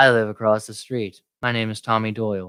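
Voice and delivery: creepy serial-killer voice passing as normal. Repeating the neighbor's line from the movie: imitating Tommy Doyle. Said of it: "He sounds like a serial killer".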